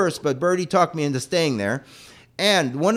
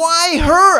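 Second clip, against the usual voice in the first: very high, loud, full-lung scream; 12 semitones higher, 8 dB louder than usual. Retelling standing in the middle of a street, the speaker is retelling a scream. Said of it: "I started screaming".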